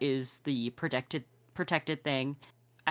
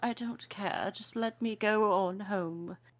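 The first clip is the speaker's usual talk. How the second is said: lazy, pompous, self-satisfied voice, pitched high; 6 semitones higher than usual. Trying out a voice for the character Larissa, lazy pompous. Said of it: "the lazy version of pompous".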